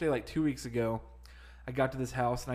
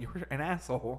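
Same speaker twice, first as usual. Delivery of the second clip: ordinary talk, nothing marked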